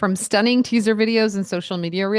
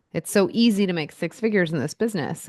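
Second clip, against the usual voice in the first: usual speaking voice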